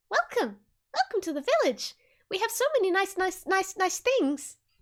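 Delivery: put-on mouse voice. Voicing a mouse that greets the visitors to its village, mouse character voice. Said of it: "it just goes like".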